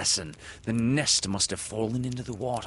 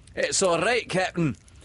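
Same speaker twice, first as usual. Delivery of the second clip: smug, self-satisfied, very high and loud; 10 semitones higher, 5 dB louder than usual. Asked by the captain where the prisoner is, the bosun answers complacently. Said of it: "Smee answered complacently".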